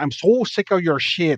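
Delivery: fed-up, angry rant in an attempted Wisconsin accent. Describing a scene from a video, acting out a woman going off on a guy. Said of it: "just going off on this guy".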